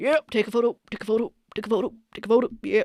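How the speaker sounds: self-important, arrogant mayor voice. Retelling the mayor on the red carpet: impression of the arrogant mayor. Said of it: "Do you like my impression?".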